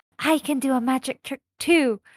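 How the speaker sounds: whispering in an acted voice. Speaking in character, telling everyone about a magic trick: whispering in character. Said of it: "So I'm gonna whisper to everyone".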